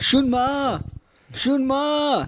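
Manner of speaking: high-pitched shout.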